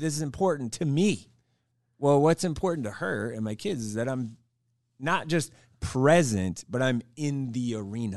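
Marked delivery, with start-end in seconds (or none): 0.0-1.3 mock snappy, curt delivery, higher pitch. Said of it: "it's not quite like that, but it's, it's very much so".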